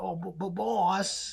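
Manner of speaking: high, very slow, stammering, dragged-out dumb voice. Describing Rocksteady in the original cartoon, quoting him: dumb Rocksteady voice. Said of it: "Like he has this really dumb sounding voice".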